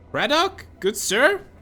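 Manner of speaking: very high, hopeful calling-out voice. A man looks up hopefully as the listener approaches and calls out in a high voice. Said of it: "calls out in a high voice".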